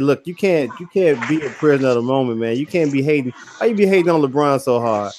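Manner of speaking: ordinary delivery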